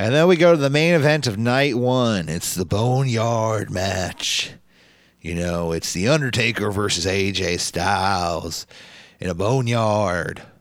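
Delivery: put-on Southern American dude voice. Recapping the main event of a wrestling show: Undertaker impression. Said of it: "She's talking like a Southern dude".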